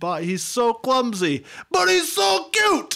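mock shrill, very high squealing scream, climbing up. Retelling a story, acting out Samantha after she hangs up: imitating Samantha screaming. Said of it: "she screams".

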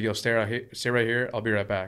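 ordinary talk, nothing marked

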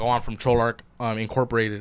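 ordinary delivery

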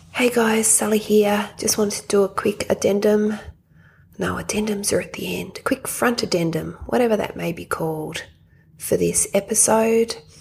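hushed whisper. Recording a quick note from a hospital bedside, whispering. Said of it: "Sorry for the whispering".

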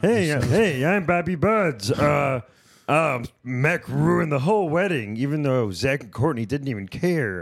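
high, loud, very slow, hesitant, froggy, puppet-like drawl. Doing an impression after being asked for Bobby Buds: Bobby Buds impression, Kermit-like. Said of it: "It's kind of a Kermit kind of a".

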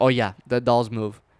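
normal talking voice

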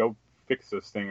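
normal talking voice

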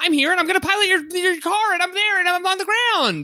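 put-on very high, old anime dub style voice. Imitating a dubbed anime character matching Japanese syllables: Speed Racer voice. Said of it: "speed racer voice".

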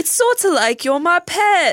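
very high-pitched fake British accent. Comparing someone to a pet in a put-on British accent. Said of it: "Sorry, my British accent is not good".

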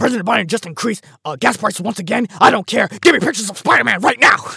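very high, very loud, shrill and booming yelling. Talking about a Spider-Man movie, acting out the newspaper editor, J. Jonah Jameson impression. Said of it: "I want to do my best impression".

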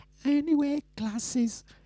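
very high-pitched, teasing put-on voice. Showing how Drea talks, correcting a first try: Drea impression. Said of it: "Drea talks like this".

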